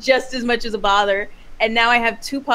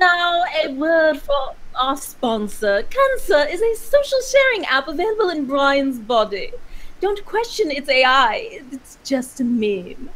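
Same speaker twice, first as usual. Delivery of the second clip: anime character voice with swooping pitch; 3 semitones higher than usual. Asked by the others to do the anime voice: anime character voice. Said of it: "Just do the anime voice".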